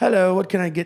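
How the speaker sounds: bad put-on British accent, high and loud. Retelling what the flight attendant said on the flight, in a terrible British accent. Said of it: "terrible uh, British a- or Australian accent".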